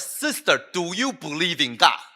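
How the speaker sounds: blunt, forceful, rude, confrontational tone. A frustrated pastor retells challenging a sister: strong, loud, rude tone. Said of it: "I was being very uh strong, loud, rude".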